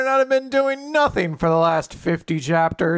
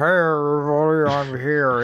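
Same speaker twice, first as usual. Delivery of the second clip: put-on drunk elephant voice, lower pitch; 3 semitones lower than usual. Imagining the giant elephant's anime voice: drunker Mister Plinkett voice. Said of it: "it's just a drunker Mister Plinkett".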